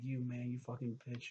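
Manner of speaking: put-on tearful outburst. Retelling a scene where Jesse holds a gun: imitating Jesse crying. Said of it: "he's crying".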